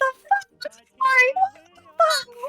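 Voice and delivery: angry yelling in a put-on voice. Voicing a party guest after a drink spills on them: yelling in character. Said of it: "yelling at you".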